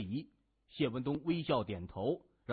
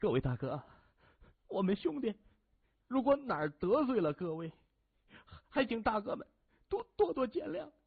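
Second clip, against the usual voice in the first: shaky, frightened, trembling quaver, high and rising; 8 semitones higher than usual. A man swallows hard and addresses the group of men, in a trembling voice. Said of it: "声音颤抖的说".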